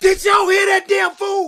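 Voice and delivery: high, loud outraged shout.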